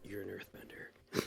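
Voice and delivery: hushed voice. As Rosek in a game, answering a call for ideas to free trapped men; hushed tone. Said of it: "in a hushed tone".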